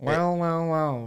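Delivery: big nerdy put-on voice. Retelling being greeted while getting dinner, speaker uses a big nerd voice. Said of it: "biggest nerd voice".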